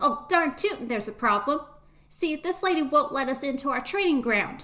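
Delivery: high, loud little duckling character voice. A duckling answers the guard's question, in a duckling voice. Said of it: "one of the ducklings turns to you and says".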